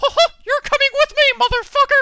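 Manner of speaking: shrill, very loud, high-pitched cartoon squeak. Joking that Mickey Mouse drags a friend out the door: Mickey Mouse voice. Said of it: "He's getting kidnapped by Mickey Mouse".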